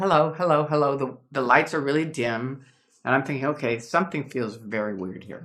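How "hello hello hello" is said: put-on stiff, cold, formal tone. Describing old friends greeting you on arrival, imitating a stiff cold greeting. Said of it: "they're like".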